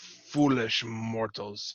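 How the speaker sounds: snarling, spiteful, hateful elf voice. Narrator voicing a hateful spectral woman addressing the mortals, snarling. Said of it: "she snarls".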